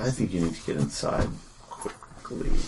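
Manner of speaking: close, hushed whisper right into the ear. Game master voicing an unspeakable power speaking into a player's ear, whispering. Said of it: "whispers in your ear".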